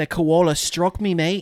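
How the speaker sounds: poor put-on Australian accent. Trying out accents while the other speaker criticizes them, bad Australian accent.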